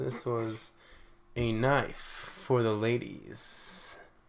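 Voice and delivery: smooth put-on voice, halting, with pauses. Describing a movie they watched, the speaker puts on a smooth voice. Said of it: "let me put on my smooth voice".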